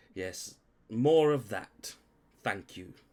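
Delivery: irritated wealthy-sounding voice. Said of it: "really pissed off, like, rich person look".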